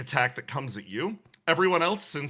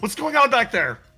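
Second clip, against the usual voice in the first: very loud, high-pitched yelling; 9 semitones higher, 9 dB louder than usual. Voicing a character yelling from the front seat: Riddle yelling. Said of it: "you hear Riddle yelling from the front seat".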